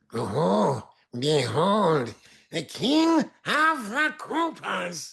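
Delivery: very high character voice, swooping wildly. Asked what the character sounds like, the voice actor demonstrates: Peter Lorre-inspired character voice. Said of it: "what does he sound like?".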